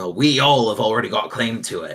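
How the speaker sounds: blunt, firm adventurer character voice. Voicing the armed adventurer in the middle as the group approaches: voicing an armed adventurer. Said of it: "the one in the middle goes".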